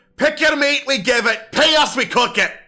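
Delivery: very high, shrill shouting. Narrator voicing a dwarf behind the meat counter as players enter, yelling dwarf butcher. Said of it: "one of the dwarves behind the counter yells out".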